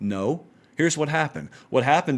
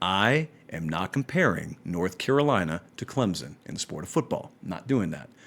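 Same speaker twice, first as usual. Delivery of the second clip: very low, very slow, deliberate, drawn out word by word; 8 semitones lower, 6 dB quieter than usual. Addressing podcast listeners who play episodes at high speed, talking really slowly. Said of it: "I'm going to talk really slow here".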